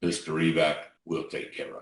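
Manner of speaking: deep, soft voice. Retelling how Bill Bailey answered a scared young man's questions, Bill Bailey's deep voice. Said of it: "Bill Bailey says in his deep voice".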